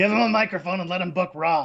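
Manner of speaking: nerdy put-on voice. Imitating the boss giving an order: Vince McMahon nerd voice. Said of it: "That's Vince McMahon's nerd voice".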